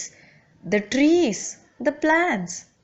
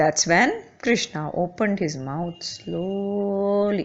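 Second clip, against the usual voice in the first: ordinary delivery, nothing marked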